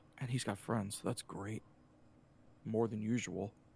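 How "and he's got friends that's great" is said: muttered under the breath, much quieter and lower. Retelling what a passing gentleman said, muttered under his breath. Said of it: "under his breath goes".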